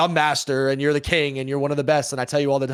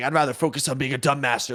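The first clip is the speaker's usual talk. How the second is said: angry-sounding voice. Retelling an online argument, imitating Simp angry. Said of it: "he got super mad".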